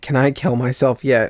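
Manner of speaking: ordinary talk, nothing marked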